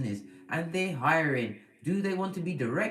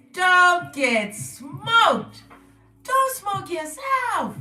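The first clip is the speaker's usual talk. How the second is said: loud, high, squeaky cartoon voice; 12 semitones higher, 9 dB louder than usual. Speaker repeats a usual catchphrase in a Gingerbread Man voice from Shrek. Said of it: "In my gingerbread man voice from Shrek".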